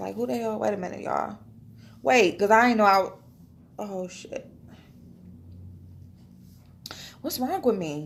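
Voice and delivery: emotional, near tears, choked up. Thanking new subscribers for sharing a video: getting emotional, near tears. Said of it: "I can't be getting emotional".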